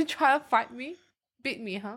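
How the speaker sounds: teasing, playfully combative, aggressive tough-guy voice. Refusing to wrap up when told to, mock aggressive. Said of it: "Why are you so aggressive today".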